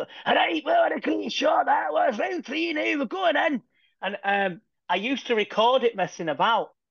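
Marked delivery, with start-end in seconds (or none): 0.0-3.6 put-on very high-pitched commentator voice in a Scottish accent. Retelling pretending to commentate boxing as a kid: Jim Watt voice. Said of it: "I used to pretend to do his".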